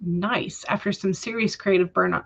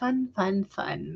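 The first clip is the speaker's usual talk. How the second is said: bone-dry, sarcastic, mock enthusiastic cheer; 6 dB quieter than usual. Reacting to a chat message about coding project modules: sarcastic. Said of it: "That is sarcasm, by the way".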